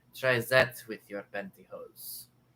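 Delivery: attempted put-on French accent. Asked to repeat a French woman's line, imitating a French accent. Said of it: "Was that not French enough?".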